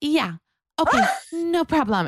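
very high, polite phone voice. Teasing someone about how she answers a phone call, imitating her phone voice. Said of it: "then she'll get a phone call".

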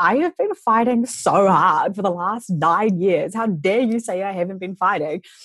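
stung, affronted, offended, indignant tone. Retelling own reply after feeling offended: retelling own offended reply. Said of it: "I was a little bit offended".

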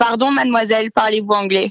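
mademoiselle in authentic native French, fluent and smooth. Showing how to address a woman in french, in native french pronunciation. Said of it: "you say".

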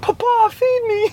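put-on very high, little British boy voice and accent. Voicing the dog as a British boy, put-on British boy's accent. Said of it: "it's become like a British boy".

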